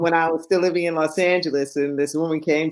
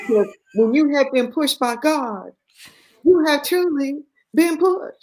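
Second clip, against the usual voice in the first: put-on very high-pitched, thick, broad Southern Texas accent; 10 semitones higher than usual. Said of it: "this thick Southern, uh, Texas accent".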